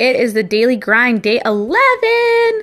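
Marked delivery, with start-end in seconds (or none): 1.2-2.6 very high, slow, stretched-out excited voice. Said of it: "Why did your voice just get really high-pitched?".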